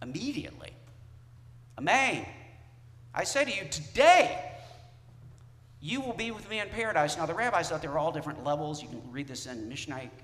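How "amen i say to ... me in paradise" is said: mock commanding, certain, raised authoritative voice. Speaker retelling a gospel scene, acting out an authoritative tone. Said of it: "Jesus authoritatively says".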